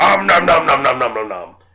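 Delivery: loud, chomping, gobbling cartoon monster voice. Naming a TV show character by his eating sound: Cookie Monster voice. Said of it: "he's the voice actor for Cookie Monster".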